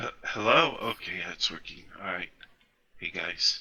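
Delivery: groggy, just-woken-up voice. Greeting the others on a call, sounding just woken up. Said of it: "You sound like you've just woken up".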